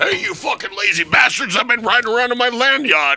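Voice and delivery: very high, shrill, yelled shout. Retelling Pyle yelling at people to run around the track; retelling Pyle's shouting. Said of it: "shouting at these people to run around".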